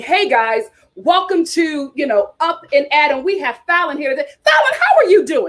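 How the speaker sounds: peppy, upbeat, high-energy show host, rising. Showing how to open the show with energy: high-energy host welcome. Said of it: "you gotta bring that energy".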